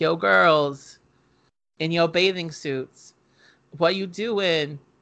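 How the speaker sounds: plain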